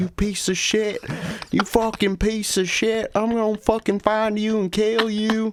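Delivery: put-on angry yelling. Acting out a gamer's reaction after another speaker asks for an impression: imitating someone yelling angrily. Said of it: "yelling at his dog while the other guy's like".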